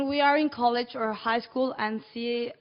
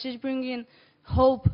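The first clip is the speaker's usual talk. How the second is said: ordinary talk, nothing marked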